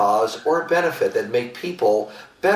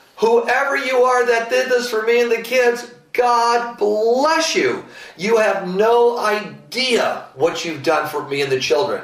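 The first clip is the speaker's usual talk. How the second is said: very high-pitched, very loud, booming preacher-style proclamation; 11 semitones higher, 3 dB louder than usual. Retelling how a woman addressed the restaurant crowd, retelling a loud evangelistic voice. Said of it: "she said in a very loud and evangelistic voice".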